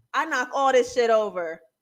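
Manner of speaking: normal talking voice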